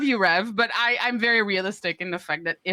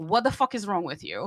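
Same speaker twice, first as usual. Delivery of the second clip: ordinary talk, nothing marked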